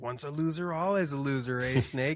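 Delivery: gloating, taunting villain voice. Retelling how a game villain taunts the hero: imitating a taunting villain. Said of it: "he's taunting Snake".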